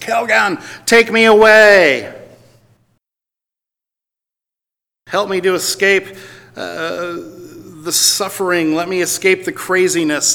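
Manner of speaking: high, slow, drawn-out pleading scream. Quoting a woman who screams for kelgan to take her away; retelling a scream.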